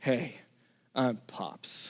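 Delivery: big deep voice in a hushed, breathy whisper. Recalling the moment a new friend introduces himself; imitating Pops's big, deep voice. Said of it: "with this big, deep voice".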